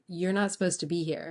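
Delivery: normal talking voice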